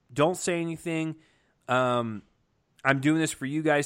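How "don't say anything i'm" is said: ordinary delivery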